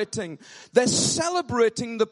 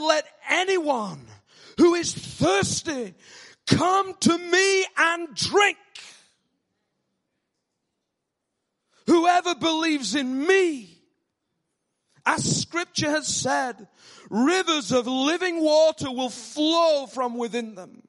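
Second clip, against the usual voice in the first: put-on proclaiming, calling-out cry in preacher style; 4 semitones higher than usual. The speaker quotes a man who cried out to anyone thirsty, retelling a shout. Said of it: "why I'm shouting today".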